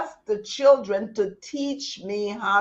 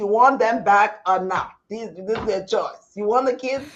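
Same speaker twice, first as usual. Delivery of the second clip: ordinary talk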